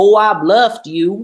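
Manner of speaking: fake slow southern accent. Speaker quotes what a poker opponent said after showing his hand, southern accent. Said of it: "in a um in a southern accent".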